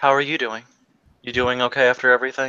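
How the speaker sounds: the calmest voice imaginable, utterly calm. Retelling a man asking someone if he's doing okay, imitating a very calm voice. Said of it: "he has like the most calm voice you've ever heard".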